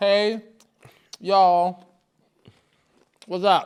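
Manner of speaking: very slow, loud talking with mouth full, chewing. Greeting viewers at the start, talking with a mouth full. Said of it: "I'm munching on stale Popeyes chicken".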